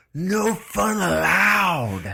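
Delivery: imitated yelling. Retelling own past yelling at police: imitating own past yell. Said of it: "you just started yelling at them".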